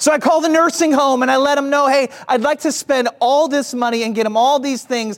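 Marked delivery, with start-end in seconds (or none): none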